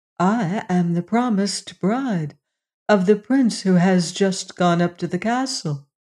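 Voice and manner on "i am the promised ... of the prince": plain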